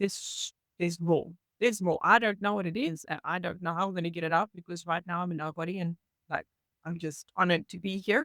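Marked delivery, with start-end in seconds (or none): none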